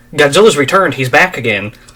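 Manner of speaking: ordinary talk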